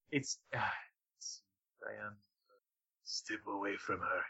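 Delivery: very soft, hushed, gritty luchador wrestler voice. Describing how a character's voice turned out, the speaker does a gritty luchador voice. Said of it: "it just turns into this gritty luchador voice".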